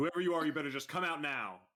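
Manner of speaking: high shouted yell. Voicing a character yelling into a room at barrels: yelling at the barrels. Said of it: "I'm gonna yell at the barrels".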